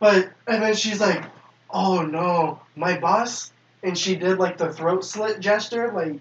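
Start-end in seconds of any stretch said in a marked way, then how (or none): 1.7-3.5 very slow, drawn-out masseuse voice. Retelling an encounter, quoting what she said next, imitating the woman. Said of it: "I'm doing an impression of her".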